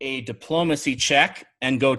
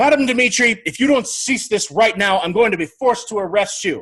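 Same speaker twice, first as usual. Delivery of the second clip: stern tone that falls flat, pitched up; 6 semitones higher, 5 dB louder than usual. Voicing a captain threatening to arrest an old woman after a failed diplomacy check: voicing a captain who fails to sound imposing. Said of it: "So he's like".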